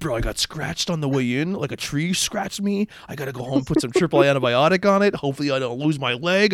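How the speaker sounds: put-on overdramatic, overplayed voice. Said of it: "Scotty just overplaying it".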